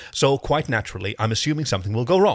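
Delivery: ordinary delivery, nothing marked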